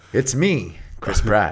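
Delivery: very low, bass-heavy voice, dropped way down. Introducing himself to the President as Chris Pratt, Chris Pratt voice with added bass. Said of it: "I've added a little bass to my voice".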